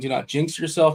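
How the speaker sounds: plain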